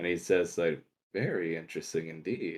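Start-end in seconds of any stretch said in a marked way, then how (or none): 1.1-2.6 very quiet, low, amused murmur. A game master voices a character looking over at a player, said with a little grin. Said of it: "He looks over to you with a little grin".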